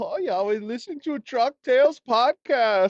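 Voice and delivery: high, slow, mock German-accented voice.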